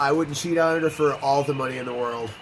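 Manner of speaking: normal talking voice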